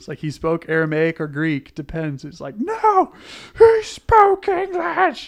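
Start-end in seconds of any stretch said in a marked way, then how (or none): 2.6-5.3 put-on high, slow, loud, bitter little-kid insistence. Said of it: "the bitter insistence".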